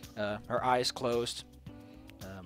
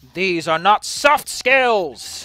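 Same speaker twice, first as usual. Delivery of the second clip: loud shouting in a character voice; 7 semitones higher, 15 dB louder than usual. Voicing a character who faces a crowd: shouting in character. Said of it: "he shouts out".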